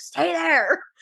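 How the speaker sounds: high, urgent, hollered yelling, acted out. Retelling a river rescue, quoting the stranded one: imitating someone yelling. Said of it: "he was yelling at me".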